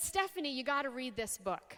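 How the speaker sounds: plain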